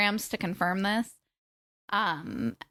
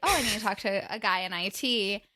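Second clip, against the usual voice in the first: usual speaking voice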